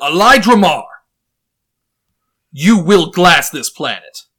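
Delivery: loud, commanding, regal king voice. Standing up before the room, the speaker delivers the planned line in his king's voice. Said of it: "using my king's voice".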